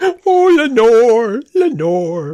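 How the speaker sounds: high, loud cartoon wail. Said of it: "Homer in The Raven".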